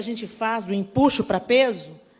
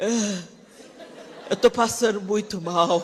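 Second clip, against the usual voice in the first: acted sickly, suffering man's voice, complaining. Mocking how a man acts when he catches the flu: imitating a man with flu. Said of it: "O homem fica gripado".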